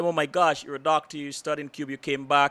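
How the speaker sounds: normal talking voice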